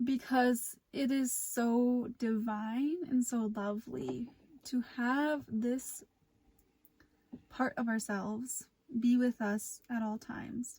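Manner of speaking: slow, teary voice on the edge of crying. Guiding a meditation on meeting your wiser self, tearing up while talking. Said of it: "I'm tearing up right now".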